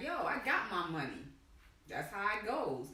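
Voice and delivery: ordinary talk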